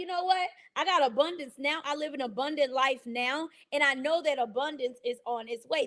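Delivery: normal talking voice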